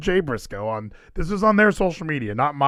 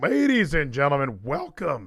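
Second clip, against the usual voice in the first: voice cracking. Opening a show while still sick: voice cracking. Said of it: "Cracked again".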